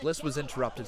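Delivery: plain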